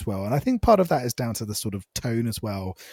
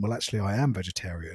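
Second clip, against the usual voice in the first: put-on deadpan, lower and quieter; 4 semitones lower, 8 dB quieter than usual. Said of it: "he deadpan just went".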